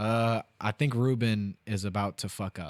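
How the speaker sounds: ordinary delivery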